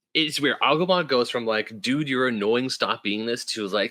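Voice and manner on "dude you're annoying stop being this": ordinary delivery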